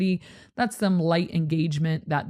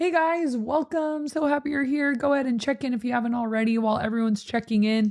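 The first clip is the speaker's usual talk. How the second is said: engaging, welcoming host voice at higher pitch; 7 semitones higher than usual. Showing how a weekend service greeting sounds: higher-pitched voice. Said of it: "Does your voice need to get, like, higher".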